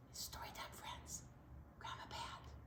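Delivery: soft, hushed whisper. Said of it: "I don't know why I'm whispering".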